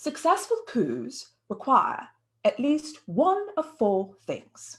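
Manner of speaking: horrible, unconvincing put-on British accent. Paraphrasing what a man said, bad British accent. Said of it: "I paraphrase in the most horrible attempt at a British accent".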